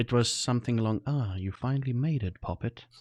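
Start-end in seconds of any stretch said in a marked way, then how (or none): 1.1-2.8 put-on, mildly patronizing, talking-down voice. Recalling what a mysterious voice said to the players: imitating a patronizing voice. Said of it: "mildly patronizing".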